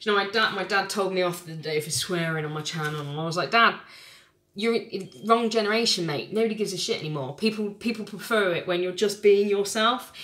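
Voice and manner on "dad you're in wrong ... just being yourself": ordinary delivery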